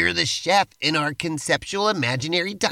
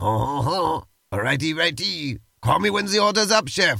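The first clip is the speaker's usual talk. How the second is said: worsening, bad fake French accent. A player in a role-play scene, speaking to the chef in a worsening french accent. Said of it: "your French accent's getting worse".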